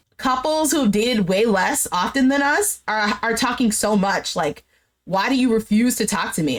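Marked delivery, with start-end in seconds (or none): none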